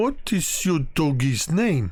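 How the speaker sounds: giant ogre character voice. Voicing an ogre asking a dog's name: ogre character voice. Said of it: "this ogre's, like, twelve feet tall".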